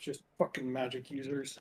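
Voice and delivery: very low mutter under the breath. A player voices a character's reaction at the table, muttering under the breath. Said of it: "all you would hear from Cal is like under his breath".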